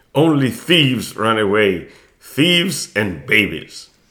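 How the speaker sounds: low, scornful, contemptuous sneering tone. A father sneers at his son. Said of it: "His father sneered at him".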